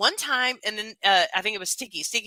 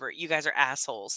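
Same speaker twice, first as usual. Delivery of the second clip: mock very low, utterly grave, dead serious delivery; 8 semitones lower, 5 dB quieter than usual. Retelling what they told the people who fooled them, in a dead serious tone. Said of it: "in the most serious tone ever".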